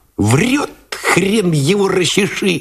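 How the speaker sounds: very high, scornful, giggly mocking jeer. A gunner scoffs at a soldier asking to rest: mocking giggle. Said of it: "захихикал насмешливо злой наводчик".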